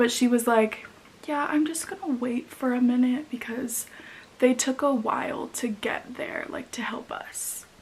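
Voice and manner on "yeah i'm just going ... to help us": muttering under breath, quieter. Retelling what a customer said at checkout, imitating someone muttering under her breath. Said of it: "under her breath".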